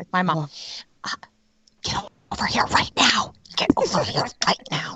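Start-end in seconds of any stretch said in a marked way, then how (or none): 1.8-5.0 re-enacted whispering. Retelling a moment in a store with Phoenix, the speaker is retelling a whisper. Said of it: "I was whispering like the old school".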